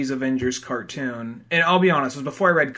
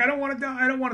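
very high, terrified, put-on child's voice; 10 semitones higher than usual. Retelling a movie scene, acting out Spider-Man: imitating scared Spider-Man. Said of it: "just fucking scared".

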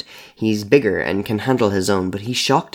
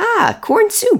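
very high, gleeful, delighted squeal; 4 dB louder than usual. A creature on a man's kitchen counter, squealing in delight. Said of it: "It squeals in delight".

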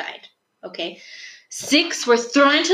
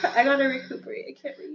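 laugh-crying, barely getting the words out; 7 dB quieter than usual. Stopping a read-aloud after a scare, crying with laughter. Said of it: "Sorry, I'm crying".

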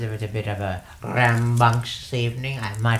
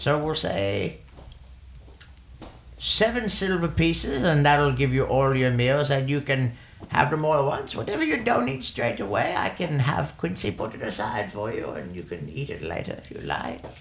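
put-on little old halfling woman character voice; 3 semitones higher than usual. Game master voices a halfling woman offering a player meals for silver: little old halfling woman voice. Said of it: "And it's just like little old halfling woman".

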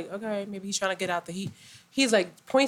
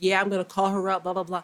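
usual speaking voice

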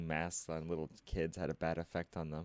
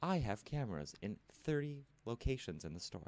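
pitched-up robot voice; 6 semitones higher than usual. Act out what a robot greeter in a store would say, in a robot voice. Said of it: "the robot goes".

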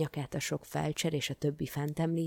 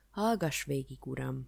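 ordinary delivery, nothing marked

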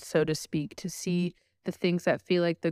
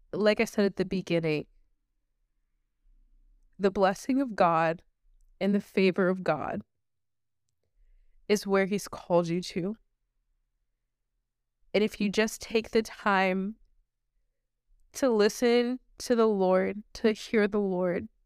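tearful speech, crying while talking; 3 semitones higher than usual. Speaker shares a spiritual moment with listeners, crying while talking. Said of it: "And like I'm crying because".

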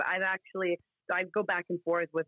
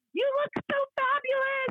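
put-on very high, screamed-out squealing call. Retelling shouting a compliment out of a window: imitating own screaming. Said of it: "I screamed something out".

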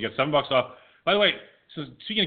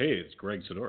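put-on sultry radio voice, lower and quieter; 5 semitones lower, 6 dB quieter than usual. Retelling a phone call, imitating a host: Greg Sidoris sultry radio voice. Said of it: "what's with the porno voice".

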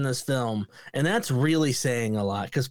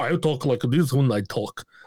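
bad fake deep Russian accent; 2 semitones lower than usual. Mocking an actress's line delivery: imitating Rebecca Romijn's fake deep Russian voice. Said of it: "fake deep Russian voice".

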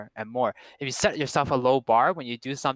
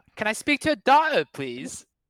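amateur British accent, very high-pitched and swooping; 10 semitones higher than usual. Asked for a line, trying it out in an attempted British accent. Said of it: "how to speak with a British accent".

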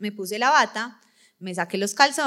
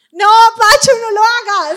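shrill, very loud, high-pitched full-volume shout; 13 semitones higher, 14 dB louder than usual. Speaker retells shouting at the nurse during a doctor's exam; retelling a shout. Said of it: "yo grité".

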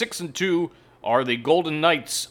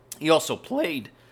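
voice cracking. Introducing a guest on the broadcast, voice cracking. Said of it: "there's another voice crack".

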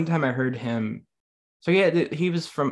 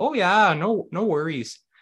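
put-on Minnesota accent with pitched-up voice; 6 semitones higher, 3 dB louder than usual. Imitating Midwesterners going back home to Minnesota: imitating a Minnesota accent. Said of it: "especially from Minnesota, they go back".

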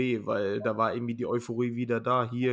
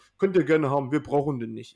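put-on chatty old man speaking with a Saxon accent; 3 semitones higher, 5 dB louder than usual. Retelling an older man who came up to them, the speaker quotes him in a Saxon accent. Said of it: "sagt so auf Sächsisch".

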